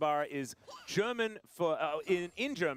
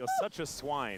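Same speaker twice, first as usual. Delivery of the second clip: normal talking voice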